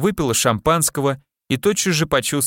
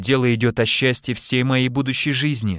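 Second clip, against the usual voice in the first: ordinary delivery, nothing marked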